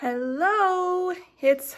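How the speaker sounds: breathless, winded voice. Starting a recording just after walking up the stairs: out of breath. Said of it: "sorry, I'm out of breath".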